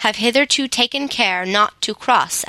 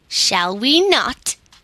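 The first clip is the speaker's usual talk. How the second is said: insolent, impudent, bold, cheeky tone; 3 semitones higher than usual. The king answers Ak's warning not to harm their friend; impudent. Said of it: "asked the king impudently".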